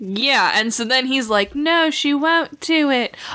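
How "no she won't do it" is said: put-on kid voice, higher pitch, slower pace. Recapping a game session, the speaker quotes another player: imitating a kid's voice. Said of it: "all these kids' voices".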